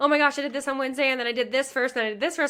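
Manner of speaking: gushing, sped-up, excited, high-pitched delivery. Showing how an excited storyteller speeds up: fast, excited, higher pitch. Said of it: "I might turn up the speed of my speaking as well as the pitch gets higher".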